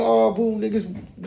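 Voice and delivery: put-on garbled, wailing mad cry, half-understood. Retelling how a wounded man came walking in crying: imitating mad crying. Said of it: "One of those mad cries".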